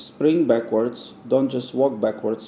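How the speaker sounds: usual speaking voice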